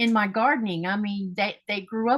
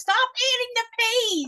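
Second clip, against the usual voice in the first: high-pitched, mock yelling. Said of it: "she used to yell at us".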